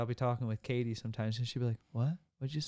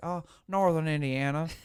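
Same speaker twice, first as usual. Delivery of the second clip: put-on deep Southern accent; 4 semitones higher, 6 dB louder than usual. Retelling meeting a work contact in indiana, imitating his deep southern accent. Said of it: "he talked with a deep southern accent".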